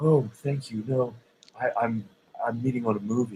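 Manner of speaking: put-on hushed, sultry, seductive voice. Retelling answering a man who offered a modeling agency card: imitating own sultry voice. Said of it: "I had this very sultry voice".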